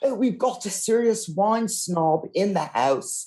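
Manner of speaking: really bad put-on English accent, very high. Imitating restaurant staff spotting a wine snob: bad english accent. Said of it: "they're gonna have a really bad English accent suddenly".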